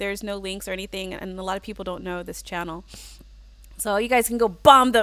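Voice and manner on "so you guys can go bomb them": forceful, aggressive emphasis. Telling viewers to go visit another channel, with aggressive emphasis. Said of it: "the emphasis of how I said it sounded like really aggressive".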